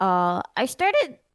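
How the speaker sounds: slow delivery, voice cracking.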